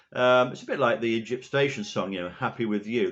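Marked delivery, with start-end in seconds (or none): none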